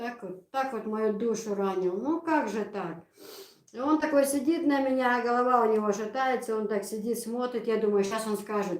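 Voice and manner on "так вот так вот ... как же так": plain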